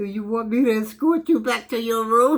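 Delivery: play-acted speaking while chuckling, laughing through words. Telling a story, quoting what a doctor asked: laughing while talking. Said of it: "Excuse me for laughing".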